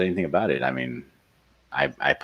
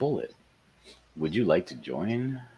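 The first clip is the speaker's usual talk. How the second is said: sweetly polite, really nice tone; 4 semitones higher, 6 dB quieter than usual. Reading out a chat invitation while typing it, said really nicely. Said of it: "I'm gonna say it really nicely".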